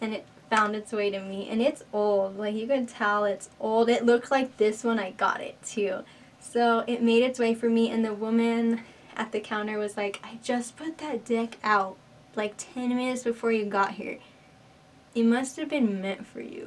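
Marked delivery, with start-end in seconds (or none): none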